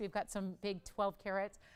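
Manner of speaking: ordinary talk, nothing marked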